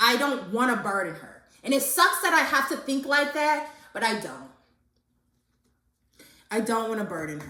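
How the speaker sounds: near tears, tears held just under it. Talking about not wanting to burden a tired mom, holding back tears. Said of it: "I'm trying to hold back tears".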